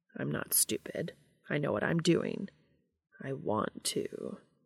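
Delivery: slow, unhurried, purring voice. Reading a story aloud, a character insists to another: purring. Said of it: "Cass purred".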